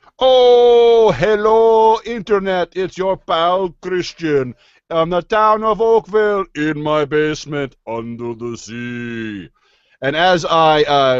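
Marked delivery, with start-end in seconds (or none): 0.2-9.5 butchered, horrible Caribbean accent, pitched up. Podcast host greets the listeners while drinking a lager, in a horrible Caribbean accent. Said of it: "butcher a horrible Caribbean accent".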